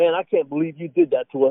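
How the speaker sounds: mock-serious delivery. Retelling a friend's joking complaint about the van: imitating someone acting serious. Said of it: "trying to be serious".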